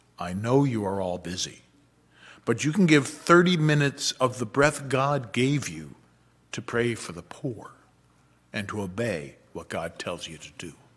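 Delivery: low, terrifyingly stern, hushed half-whisper. Retelling what the homilist said into the microphone, imitating a stern half-whisper. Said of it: "said in a terrifyingly stern whisper".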